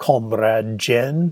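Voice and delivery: put-on, fake Russian accent. Narrator saying goodbye to jen, speaks in a put-on russian accent. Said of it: "I said those last two words with my best Russian accent".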